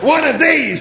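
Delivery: very loud, eager, high enthusiastic burst. A machine answers Marvin's question about its weapon, enthusiastic. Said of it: "said the machine with enthusiasm".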